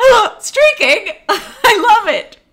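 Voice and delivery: mock rapture, very high, very loud, swooping, drawn out. Retelling how a character reacted to a streaker: imitating an excited man. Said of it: "And he's like".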